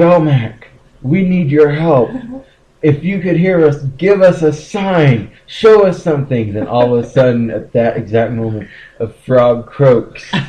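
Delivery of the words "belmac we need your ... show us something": mock, loud, belted, high-pitched pleading call. Retelling how they tried to summon the bridge troll, acting out a belted plea. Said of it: "belts out".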